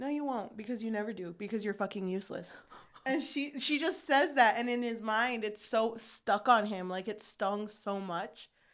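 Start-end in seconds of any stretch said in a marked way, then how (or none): 0.0-2.5 mock, very nasty, scornful, contemptuous tone. Retelling what a woman snapped at a man, in a very nasty voice. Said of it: "in a very nasty voice".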